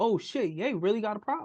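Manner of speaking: ordinary talk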